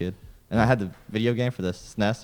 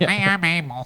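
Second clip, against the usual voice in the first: put-on pinched-nose voice, higher and louder; 10 semitones higher, 6 dB louder than usual. Doing a quick impression of a co-host by holding the nose: imitating a friend with nose held. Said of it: "Is that how you imitate somebody?".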